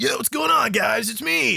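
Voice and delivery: cringy anime dub voice, very high and creaky. Describing how a game's characters talk, the speaker does a cringy anime dub voice. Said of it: "I do this voice all the time on here where it's like".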